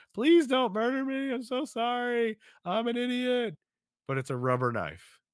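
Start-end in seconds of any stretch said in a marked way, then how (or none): 0.2-3.6 very high, slow, drawn-out pleading whine. Retelling a sitcom scene where a character begs on the ground: imitating begging and whining. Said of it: "starts begging and whining".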